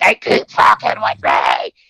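mock ragged, creaky, fit-throwing screaming rant. Retelling how she went into every room all night, imitating her screaming. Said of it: "going around for the rest of the night screaming".

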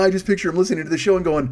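ordinary delivery

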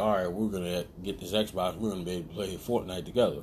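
ordinary delivery

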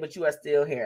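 plain

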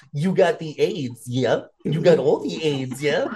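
put-on babyish, talking-down baby talk. Imagining a doctor explaining a diagnosis to a patient, doctor using baby talk. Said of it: "explaining the procedure he's about to do to you in baby talk".

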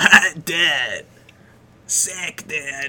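chain-smoker voice, casual dude style. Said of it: "he sounds like a fucking chain smoker".

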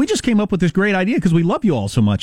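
fake-sincere, caring-sounding corporate tone. Mocking how Zuckerberg sounds when announcing a privacy feature: imitating Zuckerberg's tone of voice. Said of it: "the way Zuckerberg always uses the tone of voice".

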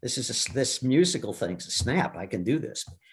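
usual speaking voice

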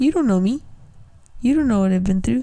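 put-on irritated, put-out, very annoyed snappy tone. Recounting being annoyed at people, acting out her own reaction: retelling an annoyed reaction. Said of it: "And I was so annoyed".

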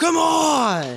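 high, loud, angry yelling scream.

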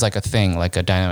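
ordinary talk

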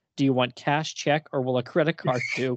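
ordinary talk

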